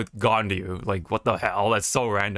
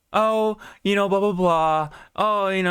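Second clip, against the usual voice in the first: put-on very high, chatty rich-girl voice; 11 semitones higher than usual. Describing how a game character talks, rich girl voice. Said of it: "brought out her uh the rich girl".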